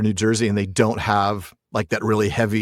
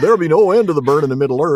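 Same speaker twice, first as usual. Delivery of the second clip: mock West Country accent, higher; 6 semitones higher, 3 dB louder than usual. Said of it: "what accent was that?".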